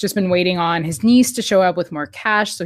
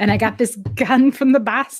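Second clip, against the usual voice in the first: put-on higher Boston-accented voice; 5 semitones higher than usual. Acting out a character's lines while recounting a plot, boston accent. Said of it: "That was a really good Boston accent".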